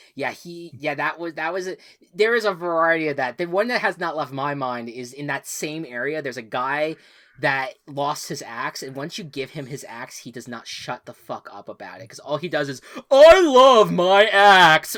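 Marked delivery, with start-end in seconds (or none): 13.1-15.0 high, booming, very loud, very slow, drawn-out doting gush. Retelling a game character who repeats himself: imitating the game's axe guy. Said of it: "that was such a good impression".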